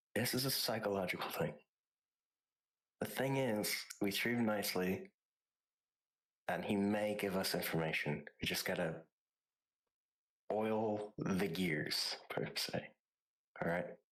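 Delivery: speaking in a whisper. Whispering in character to another player who kneels down to listen: whispering. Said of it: "I'm gonna whisper".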